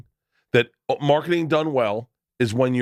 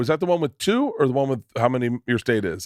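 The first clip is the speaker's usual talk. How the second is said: ordinary talk, nothing marked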